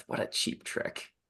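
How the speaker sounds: hushed, muttered under the breath, nearly whispered. Voicing a character's aside about a cheap trick: muttered under breath. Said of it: "says under his breath".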